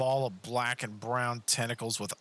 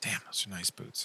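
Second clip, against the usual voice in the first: quieter, faster mutter under breath; 5 dB quieter than usual. Narrating a character who speaks as the player sprints up, muttering under his breath. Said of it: "you hear under his breath".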